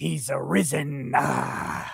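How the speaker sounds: soft, rough, pulpit preacher delivery. Answering a viewer's request to say the Phoenix line, in preacher voice. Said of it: "in preacher voice".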